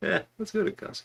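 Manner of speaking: put-on nonchalant tone. Retelling the wife's answer to a tornado warning: imitating a nonchalant reply. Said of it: "I just love the nonchalance".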